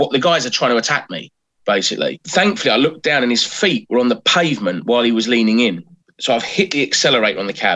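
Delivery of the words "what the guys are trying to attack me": ordinary talk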